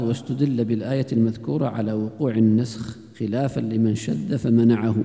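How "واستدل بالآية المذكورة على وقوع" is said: ordinary delivery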